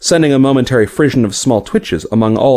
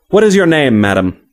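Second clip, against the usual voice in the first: ordinary delivery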